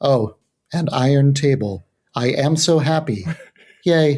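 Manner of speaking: very slow, flat, level robotic droning monotone. Describing subdued-sounding Pokémon, the speaker imitates Metang: flat robotic Metang voice. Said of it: "really flat robotic delivery".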